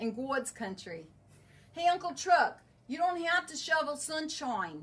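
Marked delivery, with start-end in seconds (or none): 1.7-4.8 attempted Boston accent, pitched up. Seller pitching a product, addressing Uncle Chuck in a Boston accent. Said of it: "Did that sound Boston enough?".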